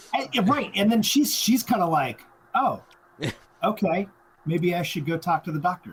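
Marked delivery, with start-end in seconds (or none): 2.5-5.9 put-on casual, unworried tone, higher pitch. Retelling a movie character's reaction to the news: imitating an unworried tone. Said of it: "very, like, not worried about it".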